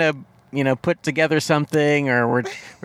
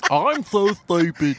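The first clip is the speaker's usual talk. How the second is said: put-on dopey cartoon dog voice; 2 semitones higher than usual. Showing how easy the other cartoon voices are: Goofy voice. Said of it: "And Goofy's like".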